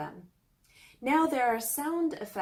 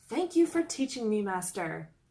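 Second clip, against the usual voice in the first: ordinary talk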